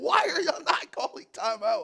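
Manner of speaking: very high half-scream. Retelling watching the clock run down, retelling own screaming. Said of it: "I'm screaming".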